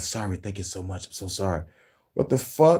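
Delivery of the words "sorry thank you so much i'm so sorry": barely audible, faint, very quiet hushed whisper. Imitating an apology overheard on a hot mic: imitating a whisper.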